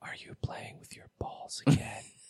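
soft, breathy, put-on seductive sultry whisper. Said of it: "whispers in".

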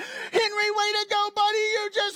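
play-acted, very high, gushing, excited. Retelling how you cheer Henry on, act out excited celebrating. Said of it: "We're so excited".

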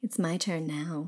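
eerie, low, hushed put-on creepy voice. Retelling a scene, the speaker quotes what she says: creepy voice. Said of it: "in this, like, creepy voice".

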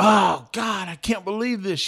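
mock woman's screaming cry of shock and disbelief. Retelling how a moviegoer reacted in the parking lot: imitating a woman screaming. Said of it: "One woman was screaming".

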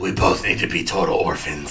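whispered, hushed and breathy hero voice. Delivering a line in a Batman voice, which the listener notices. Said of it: "Is that your Batman voice?".

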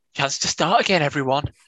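chirpy life coach pitch.

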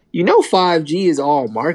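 ordinary talk

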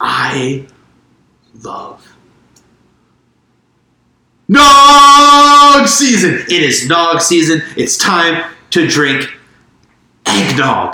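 ear-splitting, very loud, high swooping yell, one word drawn out. Podcast host opening a spirited debate on Christmas beverages, very loud. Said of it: "you said that so loud that our headphones cut out".

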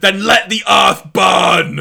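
very loud, booming, all-out villain battle cry. Retelling a cartoon scene where Starscream shouts: Starscream shouting. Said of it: "Starscream just shouts".

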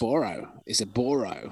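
slow, attempted put-on Australian accent. Saying a product name the way an Australian reviewer does: attempted Australian accent. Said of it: "my attempt to say Boro in an Australian accent".

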